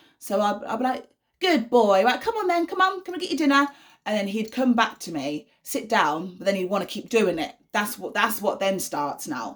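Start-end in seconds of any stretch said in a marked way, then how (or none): 1.4-3.7 very high, cheerful, upbeat, coaxing tone. Retelling how they coax him back to his dinner; put-on upbeat voice. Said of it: "everything has to be in an upbeat voice".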